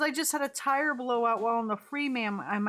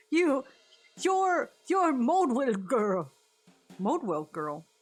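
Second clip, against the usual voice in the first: put-on old southern man voice. Voicing a character who addresses the Modwell girl, in a southern old man voice. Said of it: "southern old man".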